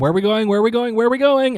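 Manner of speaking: insistent, repeated, high rising yell. In character, still yelling over the comm as Dia enters the cockpit. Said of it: "I'm still yelling".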